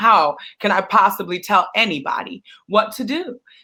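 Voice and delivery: ordinary talk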